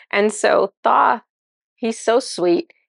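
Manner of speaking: ordinary talk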